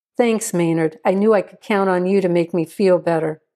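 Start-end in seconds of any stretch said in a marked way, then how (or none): none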